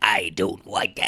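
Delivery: very low, slow, drawn-out intimidating villain voice. Imitating the bad guy from Howard the Duck trying to be intimidating: imitating Jeffrey Jones intimidating villain voice. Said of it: "when he was trying to be intimidating, he's like".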